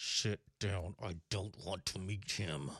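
words forced through gritted teeth, clenched jaw. Reminding the other speaker what they said while gripping a knee, imitating gritted teeth. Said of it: "you gritted your teeth and you went".

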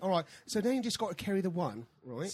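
put-on speaking in a British accent. Retelling helping kids with long division, talking in a British accent. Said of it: "I'm talking in a British accent".

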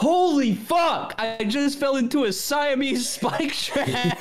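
put-on panicky yelling.

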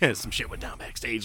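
soft, close whisper. Retelling how Jericho informed Tony, imitating Jericho whispering. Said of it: "whispering in his ear".

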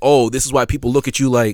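normal talking voice

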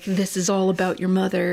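put-on German accent. Describing the stereotypical therapist with the chaise lounge, in a put-on German accent. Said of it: "the German accent".

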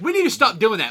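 ordinary talk

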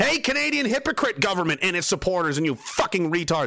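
fed-up, angry, heated ranting outburst. A speaker who has been at wars, mid-rant, getting mad. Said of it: "I'm sorry I'm getting mad".

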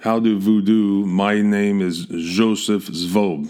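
put-on very slow, heavy, drawn-out German accent. Imagining how Joseph Schwab sounded introducing himself: heavy German accent as Joseph Schwab. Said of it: "this heavy German accent, which would have sounded something like".

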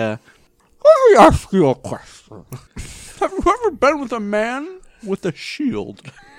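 very high voice, talking around a mouthful of food. Playing a character who keeps eating during serious business, mouthful of food. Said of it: "With a mouthful of food".

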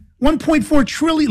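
very high, spat-out, disbelieving outburst.

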